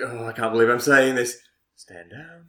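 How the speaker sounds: mock reluctant, grudging tone. Retelling a film scene in which an order to stand down is given: imitating a reluctant order. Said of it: "He's like, you can see that he's just like".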